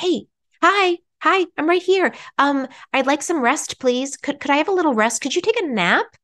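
tiny little voice, small and high. Acting out the little voice inside asking for rest: small little inner voice. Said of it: "that voice that's trying to be like".

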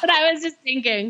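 high-pitched, giggly speech with laughter.

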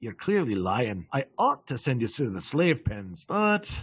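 low, dropped, quietly amused voice. A game master voices a character speaking to the players, in a lowered voice, smiling. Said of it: "he lowers his voice and he smiles".

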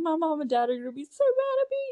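play-acted, tearful, blubbering, high swooping crying wail. Retelling a movie scene where Stu starts crying: imitating Stu crying. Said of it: "starts crying".

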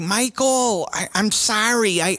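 put-on Minnesota accent. Retelling what the neighbor mom said to her crying kid; minnesota accent. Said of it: "Let me hear your Minnesota accent".

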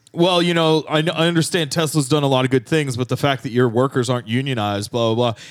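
normal talking voice

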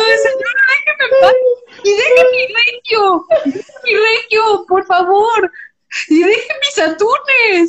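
put-on sobbing, high-pitched and tearful. Retelling an angry run-in with a lady, the speaker replays herself: retelling tearful pleading. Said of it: "Pero yo ya llorando".

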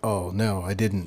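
ordinary delivery

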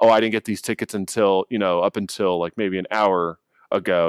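normal talking voice

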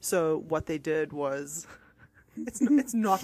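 giggling and laughing through the words. Starting to tell a story to another speaker, laughing while talking. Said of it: "I don't know why I'm laughing".

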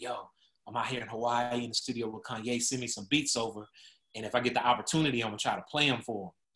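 secretive, hushed half-whisper. Retelling a phone call from someone in a studio: imitating someone half-whispering. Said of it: "he's on the phone and he's kinda whispering".

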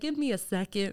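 courteous, polite customer service voice. Retelling what was said after turning around: imitating a polite customer service voice. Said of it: "Customer service voice on".

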